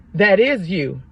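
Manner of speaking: put-on stern, commanding voice. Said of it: "it was a little bit more stern this time".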